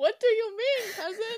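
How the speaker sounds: put-on very high, small voice with German accent. Imitating her cousin's reply to a text, in his little german voice. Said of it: "in his little German voice".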